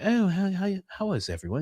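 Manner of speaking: high, lofty, princely voice. Showing listeners how George sounds compared with Tate, George impression, like a prince. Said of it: "He sounds like a prince".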